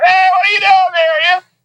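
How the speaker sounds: very high, mocking, jeering heckle. Retelling a training film where people jeer at a cop, imitating jeering. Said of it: "they're jeering at him and shoving him".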